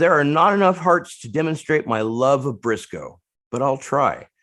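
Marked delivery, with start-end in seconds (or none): none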